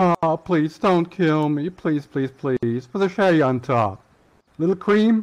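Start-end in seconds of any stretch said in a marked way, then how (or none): 0.0-2.9 begging, pleading voice. Told by another player to beg for their life, the speaker begs. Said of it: "Beg a little bit more, okay?".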